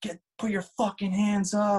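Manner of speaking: screamed, high and forceful. Retelling how the cops with guns drawn were yelling: imitating cops screaming. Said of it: "just screaming".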